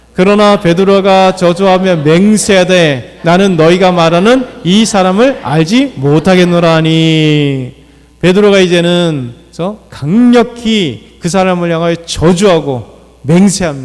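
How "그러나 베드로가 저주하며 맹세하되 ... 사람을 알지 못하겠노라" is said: many voices reading together in unison. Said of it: "같이 한번 읽어보겠습니다".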